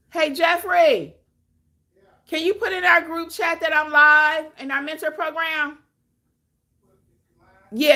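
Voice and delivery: full-on high screaming. Starting a YouTube live and asking someone to post in the group chat, screaming. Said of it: "Sorry for screaming".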